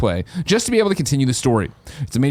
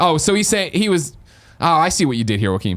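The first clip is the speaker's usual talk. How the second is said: normal talking voice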